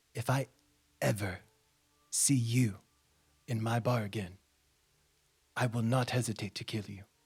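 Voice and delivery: low, menacing, threatening voice. Voicing a bar owner who throws a player out: threatening bar owner. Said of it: "he stares at you, and he says".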